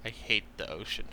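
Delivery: low grumbling mutter under the breath. A player's character on a ship looks up at the sky, muttering to oneself. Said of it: "I just mutter to myself".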